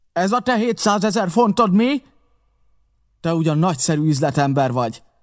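howled-out yell, high-pitched. A woman howls at a man after a gold coin is found: howling. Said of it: "Üvöltötte Mary, és megrázta az öklét".

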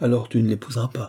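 plain

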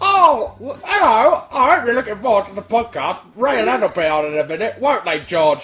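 loud puppet voice, belted out. Podcast host opening the show in character, Zippy voice. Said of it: "I'm Zippy".

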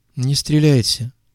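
quavering, trembling, begging, pleading voice. A man shaking with fear pleads again, in a trembling voice. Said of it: "вновь попросил он дрожащим голосом".

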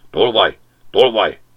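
loud, furious, growling snarl. The dog at the magpie on the rooftop, snarling. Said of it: "Acsarkodott Bújtár".

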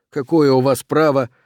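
plain

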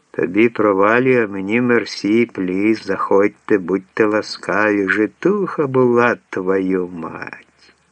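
ordinary talk

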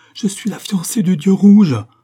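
very loud, shrill cry of despair and terror. A narrator reads Ryasanda's line as she cries out; crying out in terror and despair. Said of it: "d'une voix d'épouvante et de désespoir".

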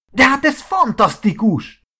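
eager, enthusiastic cry, very high pitched. Narrator reading Marci reacting to Oliver's confession, exclaiming. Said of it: "Kiáltott fel Marci".

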